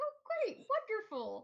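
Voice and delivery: thrilled, delighted, very high, swooping sing-song. Playing a man who is very happy to hear it, sounding very happy. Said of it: "he's very happy to hear".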